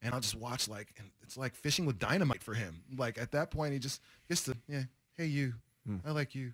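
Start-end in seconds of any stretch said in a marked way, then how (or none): 4.7-6.5 smooth, slick come-on delivery. Imitating a musician friend talking to women: imitating a friend's smooth pickup voice. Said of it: "He talks like that".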